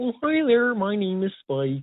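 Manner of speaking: high, goofy, friendly puppet voice. Speaker demos a voice they gave a chupacabra character, in an Ernie voice. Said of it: "it kind of evolved into our Ernie".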